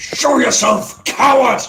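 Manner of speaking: furious shouting and screaming. Voicing a warrior who attacks the air: shouting and screaming. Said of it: "he just starts bloody shouting and screaming".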